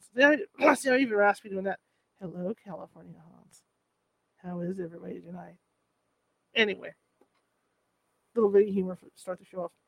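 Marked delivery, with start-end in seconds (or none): 2.2-5.5 low, deep, very soft, hushed radio voice. Opening the show, the host greets the audience in a Roz Doyle voice. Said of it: "going for that Roz Doyle sound from Frasier".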